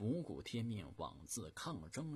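usual speaking voice

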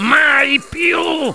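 stern fatherly outburst, pitched high. A father answers his son's wish to keep watching television, roaring. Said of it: "ruggì il padre".

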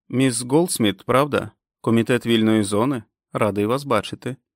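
ordinary delivery, nothing marked

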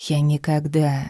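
ordinary delivery

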